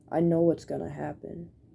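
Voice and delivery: put-on sad voice. Recalling talking to mom in her room, re-enacting a sad voice. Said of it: "in a sad voice".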